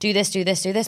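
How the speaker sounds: plain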